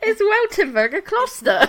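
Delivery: very high-pitched, giggling, laughing through the words. Explaining Oktoberfest beer rules and imagining the listener's question, giggling. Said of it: "I'm giggling".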